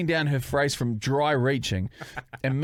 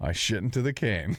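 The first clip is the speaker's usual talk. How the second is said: proud, self-assured, confident, assured tone; 4 semitones lower than usual. Retelling what a man said in front of his girlfriend, imitating a confident voice. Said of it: "a confident voice".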